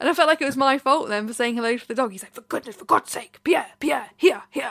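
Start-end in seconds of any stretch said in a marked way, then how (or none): 2.3-4.7 scolding, telling-off tone. Retelling how a dog owner called the dog back: imitating an owner scolding a dog. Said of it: "He was getting told off outside".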